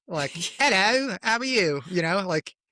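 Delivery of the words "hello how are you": slow, pitched-up Cockney-style British accent. Describing a British accent the speaker does, demonstrating a Cockney-style British accent. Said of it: "it started out sort of like Cockney".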